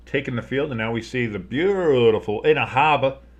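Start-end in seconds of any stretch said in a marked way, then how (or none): 2.5-3.2 put-on Boston accent with r's dropped. Doing game commentary, saying a player's name in a Boston accent. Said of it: "I don't know why I gave them a Boston accent".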